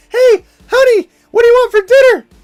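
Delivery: voice gone very high and loud. Acting out how he would ask his honey about dinner, high-pitched voice. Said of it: "why is your voice so high?".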